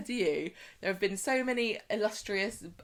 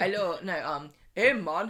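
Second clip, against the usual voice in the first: bad fake Jamaican accent, louder; 4 dB louder than usual. Trying a french accent that slips: bad put-on jamaican accent. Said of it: "No, that's Jamaican".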